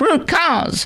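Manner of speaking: very high, nasally, annoying tone. Mocking a woman's phrase repeated in media interviews, nasal, high-pitched put-on voice. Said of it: "in her nasally, annoying, high-pitched voice".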